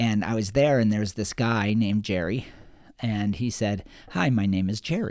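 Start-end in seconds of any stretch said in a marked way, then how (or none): 4.1-5.1 trailing off into a pause. Retelling how a man at a meeting introduced himself: imitating a line left hanging. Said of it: "he let it kinda hang".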